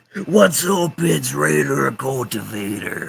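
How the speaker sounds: terrible, high, gravelly, raspy ring-announcer growl, drawn out. Suggesting a gimmick for another speaker, doing a terrible Macho Man Randy Savage impression. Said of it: "that impression was terrible".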